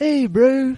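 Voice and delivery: bad put-on New Zealand accent. Retelling what a seagull says to a beached whale: bad new zealand accent. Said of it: "like this, and terrible accent".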